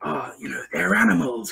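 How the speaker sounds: low, swooping, slithering, hissing snake voice, stretched s's. Retelling a character's line in a game: imitating a snake-like voice. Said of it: "he had this really, like, snake-like voice".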